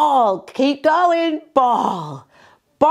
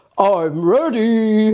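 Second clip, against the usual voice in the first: very deep, dropped-down voice; 4 semitones lower than usual. Voicing the finger Toby saying he's ready: Toby's really deep voice. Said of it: "Toby's got a really deep voice".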